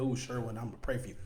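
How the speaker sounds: sarcastic, snide, insincere, tongue-in-cheek delivery. Acting out someone saying they will pray for him: imitating a sarcastic tone. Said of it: "in, like, a sarcastic way".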